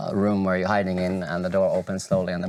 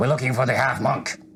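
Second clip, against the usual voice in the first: stern, severe, no-nonsense voice, pitched up; 5 semitones higher than usual. Telling a story, a voice outside the butcher's door asks for someone, stern voice. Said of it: "stern voice from the outside".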